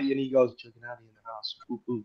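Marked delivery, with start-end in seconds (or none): 0.5-1.5 very soft, hushed voice. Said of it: "it was real quiet".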